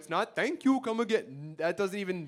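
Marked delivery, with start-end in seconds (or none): 0.3-1.5 put-on Indian accent. Performer explaining a bit to the audience, Apu impression. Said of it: "you have to forget about Apu".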